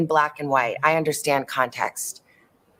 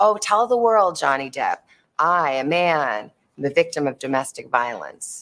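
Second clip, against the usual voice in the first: usual speaking voice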